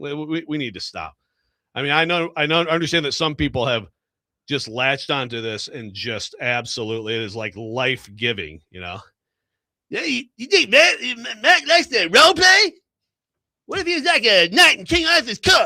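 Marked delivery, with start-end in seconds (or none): 9.9-15.7 very high, raised, loud cartoonish voice. Mocking people who invent show segments, in an Eric Cartman voice. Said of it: "that was [name] as Cartman".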